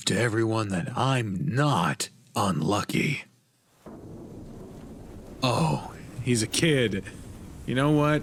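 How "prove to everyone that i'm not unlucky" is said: roughened, gruff put-on character voice. Voicing a character's lines while playing a story game: rough character voice. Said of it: "a rough voice".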